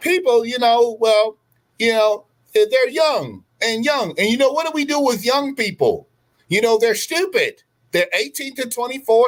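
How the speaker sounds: very high, put-on female voice. Quoting what she said on the virtue signal tour, put-on imitation of her voice. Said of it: "I'm trying to do her voice".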